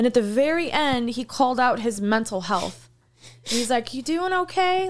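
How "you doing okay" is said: very high, patronizing, talking-down tone. Retelling an interviewer calling out a guest's mental health: mock-condescending. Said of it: "Like very like condescending".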